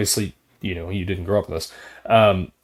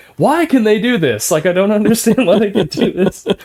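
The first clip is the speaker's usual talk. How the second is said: mock mad, exasperated, higher-pitched complaining; 12 semitones higher, 7 dB louder than usual. Retelling what she said when a video game frustrated her, imitating her getting mad. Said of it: "she would always get so mad".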